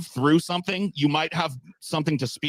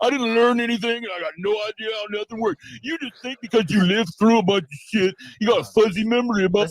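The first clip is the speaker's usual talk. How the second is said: annoying, weird, goofy, high-pitched mocking voice; 7 semitones higher, 3 dB louder than usual. Mocking an opponent mid-argument: weird goofy annoying mocking voice. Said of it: "making a weird, goofy, annoying voice".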